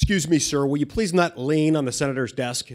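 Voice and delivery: mock stern, very loud, harsh voice. Retelling what a security guy said to him in the Senate, imitating a harsh tone. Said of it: "said in a very harsh tone of voice".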